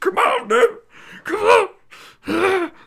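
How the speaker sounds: exaggerated, shrill, very high, very loud yell. Quote what he said to Dev in an exaggerated impression of someone. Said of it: "I exaggerate that impression".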